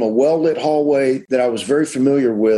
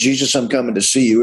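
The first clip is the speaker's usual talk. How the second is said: ordinary talk, nothing marked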